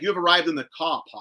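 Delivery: British sat-nav style announcement voice. Imitating a GPS set to British: British GPS voice. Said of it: "I have mine on British".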